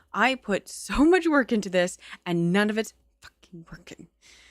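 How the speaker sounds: angry, mad tone. Complaining that the new setup is not working: angry. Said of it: "so angry right now".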